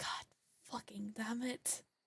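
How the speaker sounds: very soft, grumbled, muttered swearing under breath. Voicing a character who sees what happened to her: muttering a curse under breath. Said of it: "She's just gonna mutter".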